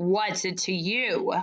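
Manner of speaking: surly, gruff, growling voice. Reading a story, the character Mister Ocox answers with a growl. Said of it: "he growled".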